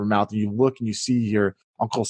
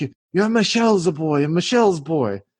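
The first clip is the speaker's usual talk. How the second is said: put-on shaky, trembling elderly woman voice, higher; 7 semitones higher than usual. Voicing an old lady with a cane greeting Marco: shaky old lady voice. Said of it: "she's kinda shaky".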